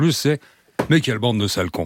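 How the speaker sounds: normal talking voice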